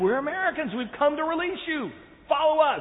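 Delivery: urgent, eager, excited high-pitched shouting. Retelling rescuers breaking in to free hostages, retelling excited shouting. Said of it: "And so they get more excited".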